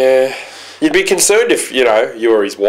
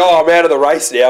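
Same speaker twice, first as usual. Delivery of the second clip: ordinary delivery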